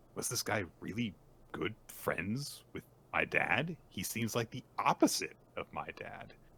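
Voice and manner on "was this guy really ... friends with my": usual speaking voice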